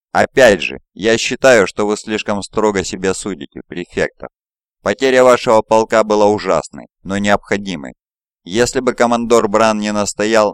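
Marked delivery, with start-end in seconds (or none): none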